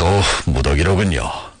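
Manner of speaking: ordinary delivery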